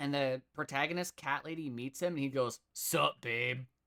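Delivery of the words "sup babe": mock sleazy regal voice. Describing a story, the cat king meets the protagonist cat lady; mock-sleazy cat king voice. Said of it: "He's just kind of like a sleazy king".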